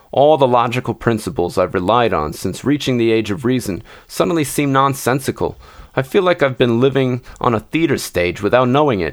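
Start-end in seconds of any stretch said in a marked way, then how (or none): none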